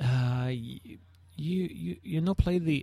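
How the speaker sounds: bad, clumsy French accent, high and slow. Retelling what a bar owner asked the band, in a butchered French accent. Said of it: "butchering the, the French accent here".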